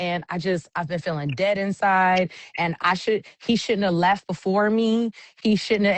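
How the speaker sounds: normal talking voice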